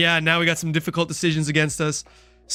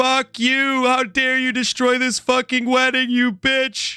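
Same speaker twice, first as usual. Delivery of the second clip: pitched-up golem voice yelled through voice changer; 8 semitones higher than usual. Narrating a game and voicing the enraged golem, in a golem voice through a voice changer. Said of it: "use my uh my voice changer here for this. The golem says".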